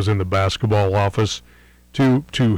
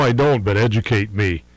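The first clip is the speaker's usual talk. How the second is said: plain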